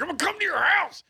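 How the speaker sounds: sudden, nasty, mean yelling, very high. Jokingly threatening a listener who sent a recommendation: mock yelling, mean. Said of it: "start yelling, like, just get real mean".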